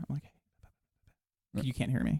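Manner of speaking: very slow, hushed whisper. Telling a work story, the speaker acts out a whisper into the radio. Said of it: "I pull up my radio and I whisper".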